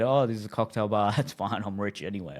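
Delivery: mock tongue-in-cheek playful, sarcastic, jokey boasting tone. Recounting a remark made to a date on the way to a second bar: retelling a sarcastic joke. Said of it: "jokingly said".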